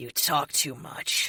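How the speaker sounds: slow, drawn-out, gravelly rasping wraith voice. A narrator reads Madison's line during a fight, Madison's gravelly wraith voice. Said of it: "Madison says in her gravelly wraith voice".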